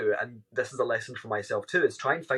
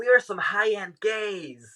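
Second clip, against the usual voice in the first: high, slow, drawn-out voice; 8 semitones higher than usual. Retelling a street moment with a friend: Jennifer Coolidge impression.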